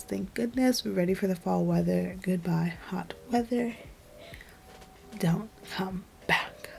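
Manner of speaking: soft, playful whisper.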